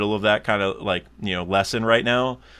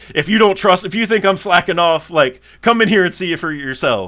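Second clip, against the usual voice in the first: mock loud yelling, pitched very high; 9 semitones higher, 6 dB louder than usual. Retelling an imagined service manager's answer to a complaint: imitating someone yelling. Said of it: "yelling at me".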